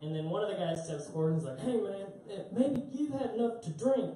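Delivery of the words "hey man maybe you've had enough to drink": sudden, high, put-on Southern accent. Retelling what one of the guys said on stepping forward, in a put-on Southern accent. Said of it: "I don't know why I just went Southern".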